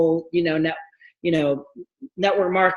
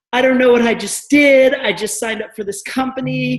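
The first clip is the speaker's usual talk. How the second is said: high, loud, put-on sobbing, words broken by crying; 7 semitones higher, 5 dB louder than usual. Retelling what she said through tears after signing up: imitating someone sobbing. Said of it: "she's, like, sobbing, and she's like".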